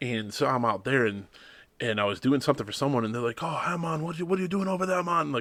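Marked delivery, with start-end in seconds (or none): 3.4-5.3 atrociously bad, pitched-up Jamaican accent. Retelling what guys outside a bar said to him: bad Jamaican accent. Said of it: "my accent is gonna be atrociously bad".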